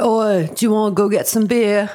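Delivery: slow, unhurried, put-on British accent. Imitating a British character from the movie: put-on British accent. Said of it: "he was British. He was like".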